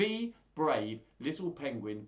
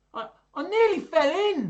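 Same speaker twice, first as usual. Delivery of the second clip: very loud, high, drawn-out gasping cry; 12 dB louder than usual. Reading a story aloud, the little penguin nearly fell in the water, gasping. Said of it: "he gasps".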